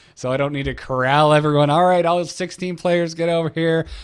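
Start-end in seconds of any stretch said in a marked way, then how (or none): 1.7-3.9 easygoing, high voice calling out. Acting out gathering sixteen tournament players: pretend yelling. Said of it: "Yes, I'm yelling".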